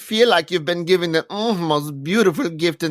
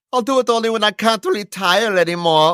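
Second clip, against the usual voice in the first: put-on heavy German accent, higher; 5 semitones higher than usual. Reading Roy's quoted comeback about retiring aloud: Roy in heavy German accent. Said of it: "Roy shot back in his heavy German accent".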